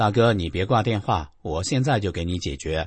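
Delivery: ordinary talk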